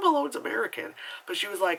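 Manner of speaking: plain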